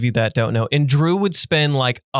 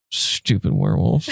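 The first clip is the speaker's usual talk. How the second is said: annoyed, quiet grumbling mutter under the breath; 4 semitones lower than usual. Retelling how he would say it out of nowhere, muttering under his breath. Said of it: "under his breath".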